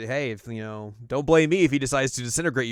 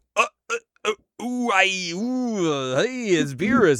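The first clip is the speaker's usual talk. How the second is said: high-pitched, very slow stammering; 8 semitones higher than usual. Retelling an episode scene, stammering on seeing Beerus: imitating Frieza. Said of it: "He's like".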